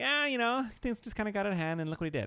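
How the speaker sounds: mock breezy offhand tone. Retelling how someone described an incident over text: imitating someone talking casually. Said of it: "It was more like".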